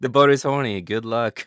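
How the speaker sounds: loud, exaggerated, hammed-up Norwegian accent. Announcing to the people aboard as the boat's captain, stereotypical Norwegian accent. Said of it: "reaching into that stereotypical Norwegian".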